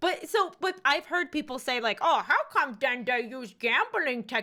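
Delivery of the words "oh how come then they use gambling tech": scornful, mocking voice. Speaker imitates people who make this argument about games, mocking impression of those people. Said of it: "This is my impression of people who say that".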